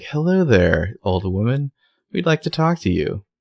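put-on sweet, well-behaved good-girl politeness. Retelling a character approaching a shop owner: imitating good girl mode. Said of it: "puts on her, like, good girl, you know, mode".

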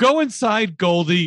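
silly, high calling-out yell, played for laughs. Recounting a scene where two parents yell at their daughter goldie, retelling a yell. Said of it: "are yelling".

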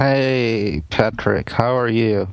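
slow, sleepy, barely awake, half-asleep voice. Greeting the host as the show starts, sounding half asleep. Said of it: "you sound more and more asleep".

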